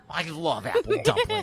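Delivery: put-on eerie old woman voice.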